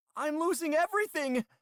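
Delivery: loud, shrill, high put-on frightened cry. A narrator reads a character reporting a malfunction to a station: put-on frightened voice. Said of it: "doing my best attempt at a frightened voice".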